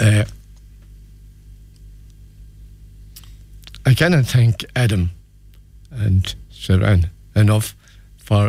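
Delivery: moved, emotional delivery, slow. Speaker describing a great day for him, getting emotional. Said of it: "I'm sorry if I'm getting emotional".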